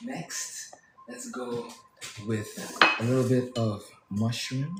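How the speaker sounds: half-whispered, soft, gentle and hushed. Adding mushroom to a plate of veggies: half-whispering. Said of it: "why are we whispering?".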